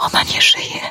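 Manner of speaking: hushed whisper. Edyta, held by Michał near the body on the road, whispering. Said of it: "szepnęła".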